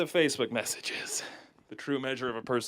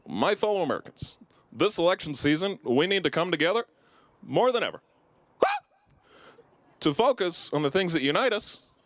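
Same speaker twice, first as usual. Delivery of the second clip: podium speech delivery, like a formal address; 4 semitones higher, 3 dB louder than usual. Performing a joke bit of a president giving a speech, Barack Obama speech impression. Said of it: "Barack Obama giving a speech".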